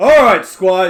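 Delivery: booming, high, very loud, wide-carrying call. A trainer calls to the squires across the yard: booming Sir Amig voice. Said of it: "says a booming voice".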